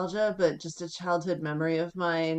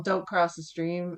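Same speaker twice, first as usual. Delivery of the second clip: ordinary delivery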